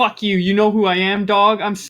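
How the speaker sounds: mock arrogant, egotistical outburst. Acting out a dog owner snapping at her dog: imitating an egotistical dog owner. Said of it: "Her ego kicks in. She's like".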